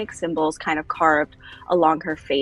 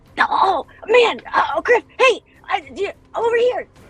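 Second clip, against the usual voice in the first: mock-excited childlike call, much higher, louder; 6 dB louder than usual. Retelling how a girl greeted a guy she admired, imitating excited childlike calling out. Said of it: "she's just so excited to see this guy".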